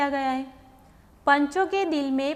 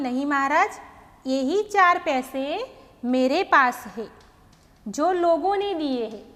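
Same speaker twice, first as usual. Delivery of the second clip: short pause following नहीं महाराज; 4 dB louder than usual. Reading a story aloud and marking the comma: short pause after नहीं महाराज. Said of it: "तो नहीं महाराज, फिर मैं थोड़ी देर रुकी, फिर मैंने यह वाक्य पढ़ा".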